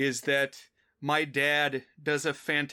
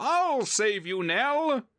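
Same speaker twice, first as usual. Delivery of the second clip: slow, drawn-out, sing-song, swooping put-on voice, pitched up; 9 semitones higher than usual. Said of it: "I'll try it".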